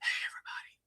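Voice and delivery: hushed whisper. Greeting everybody at the start of the show, whispering. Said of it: "I have to whisper".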